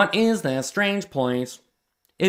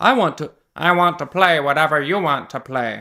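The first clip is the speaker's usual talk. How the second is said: toy robot voice, mechanical delivery; 3 semitones lower, 3 dB louder than usual. Reading a story aloud, voicing the robot character: robot voice. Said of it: "I gotta remember my robot voice".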